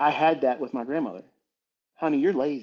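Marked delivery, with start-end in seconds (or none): 2.0-2.6 put-on Southern twang accent. Speaker quoting what his grandmother told him; southern twang. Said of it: "I can hear her southern twang".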